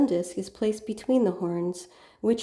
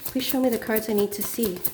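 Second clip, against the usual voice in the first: ordinary delivery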